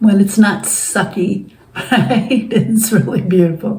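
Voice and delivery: teary, tearing-up voice, close to crying. Speaker telling listeners their life is beautiful, tearing up. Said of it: "I'm tearing up here".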